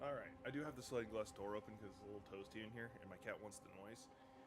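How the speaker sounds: quiet voice.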